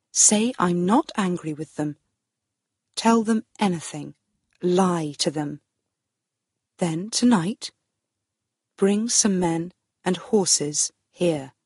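ordinary delivery

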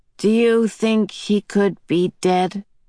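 flat, dry, emotionless deadpan. Reading a character's question to Meg, dry and unemotional. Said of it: "Calvin spoke in a dry, unemotional voice".

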